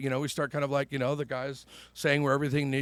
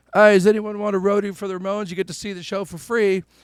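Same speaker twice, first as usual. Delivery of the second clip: loud, put-on British accent; 6 semitones higher, 9 dB louder than usual. Speaker retelling a stranger's offer to him and a friend, imitating a British accent. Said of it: "he had a British accent".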